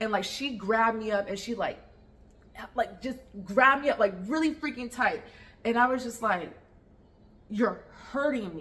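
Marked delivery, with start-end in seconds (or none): 7.5-8.6 half-whispered softly. Retelling a too-tight hug at a memorial: retelling own half-whisper. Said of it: "whispered that in her ear".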